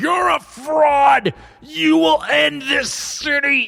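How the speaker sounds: drawn-out, very high-pitched, slow screaming. Narrating a guard pulling himself toward the nobleman, screaming in character. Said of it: "he's like screaming".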